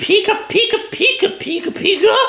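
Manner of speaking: breathy, soft little creature babble. Voicing the father Pikachu in an acted scene: Pikachu voice. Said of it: "let's hope regular Pikachu's okay with that".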